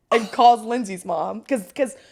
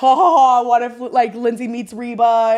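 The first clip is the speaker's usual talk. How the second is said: slow, teasing, sarcastic, mocking ha-ha laugh; 3 dB louder than usual. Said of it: "My whole family's like".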